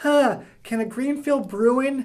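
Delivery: very high, puzzled, musing, know-it-all put-on voice. Making a March Madness pick, speaker mimics the friend who wins the pool, using the voice of friend who wins the pool. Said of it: "I'm doing this voice".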